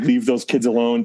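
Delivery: ordinary delivery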